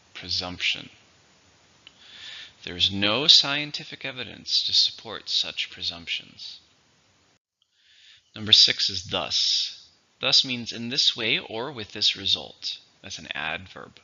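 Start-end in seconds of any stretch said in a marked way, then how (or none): 0.2-0.9 clear stress on second syllable, preSUMPtion. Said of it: "Three, stress in the second".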